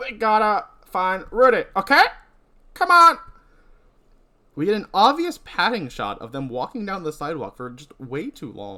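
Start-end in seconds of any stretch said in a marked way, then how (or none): 0.0-3.2 very loud, eager, belted out at full volume. Acting out a movie scene as Jen, urging Sarah on: voicing Jen. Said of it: "am I just doing that voice".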